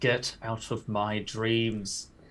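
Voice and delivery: hissed, hissing voice. Narrating his character Edrin's next swing, he speaks Edrin's line, hissing. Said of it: "he just hisses".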